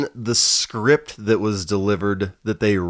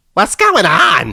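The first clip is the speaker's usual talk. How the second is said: put-on woman's voice, higher and louder; 10 semitones higher, 9 dB louder than usual. Retelling a movie scene where he hears a lady: imitating a lady's voice. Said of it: "he can hear this lady's voice".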